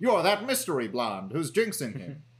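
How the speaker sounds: put-on old-time 1940s newsreel announcer reading voice. Quoting what he said about the mystery blonde, in a 1940s news-headline reading voice. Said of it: "like a person in the 40s reading out a news headline".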